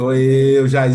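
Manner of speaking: spooky, haunting ghost voice, low and loud. Imagining coming back after death to haunt her, in a spooky ghost voice. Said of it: "Eu vou falar aquela voz de fantasma".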